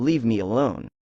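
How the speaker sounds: ordinary talk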